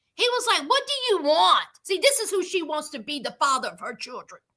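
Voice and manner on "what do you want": mock rude, disrespectful male voice. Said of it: "This disrespectful bastard".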